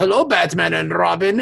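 put-on villainous military colonel character voice. Retelling a TV scene where a villain greets Batman and Robin: imitating Colonel Klink. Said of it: "It was Colonel Klink popped out, and he was like".

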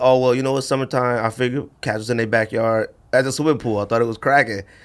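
ordinary talk, nothing marked

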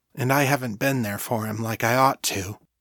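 usual speaking voice

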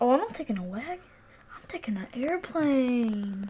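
insistent, pressing half-whisper. Answering a boast about surviving a zombie apocalypse; insistent half-whispering. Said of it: "Why are you insistently whispering?".

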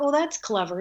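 plain

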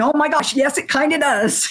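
mock, high-pitched, broken up by laughter. Retelling her own reply to a remark about her work: retelling a laughing reply. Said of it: "And I'm laughing".

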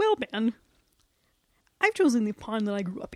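cartoon frog puppet voice. Answering the interviewer in a mock interview, in a Kermit the Frog impression. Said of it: "I do a good Kermit the Frog impression".

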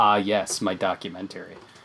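quiet under-breath mutter. Speaker recalls what he mutters at events they've covered, under his breath. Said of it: "you've heard me say under my breath".

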